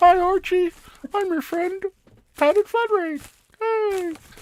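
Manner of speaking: very high-pitched hand-puppet character voice. Playing with a hand puppet while talking with a friend, the speaker uses a hand puppet voice. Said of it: "He's like".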